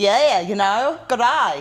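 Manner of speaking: slow, high-pitched put-on Australian accent. Showing how an attempted Irish or Scottish accent turns Australian. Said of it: "an Australian accent".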